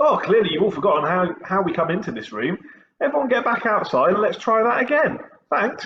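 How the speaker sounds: upbeat, positive, very high-pitched voice. A teacher demonstrates sending the class back outside to come in again, said with a smile. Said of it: "I'm saying it with a bit of a smile".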